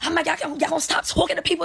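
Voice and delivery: put-on furious, high, rough, heated outburst. Retelling being grabbed by another supervisor: retelling own furious yell. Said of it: "I'm going crazy, going crazy".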